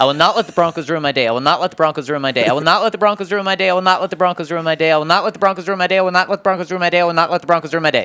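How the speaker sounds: rapid-fire, rushed, as fast as possible. Reading a co-host's saved draft tweet aloud on request, as fast as possible. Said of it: "I'm going to read it entirely as fast as I can".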